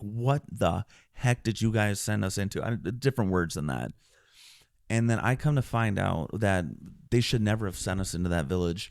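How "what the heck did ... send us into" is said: ordinary delivery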